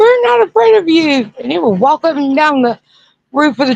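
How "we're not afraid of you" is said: mock shrieking, shrill yell, very high pitched. Retelling how the scared cousins screamed at the creature: imitating cousins screaming. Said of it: "They'd scream".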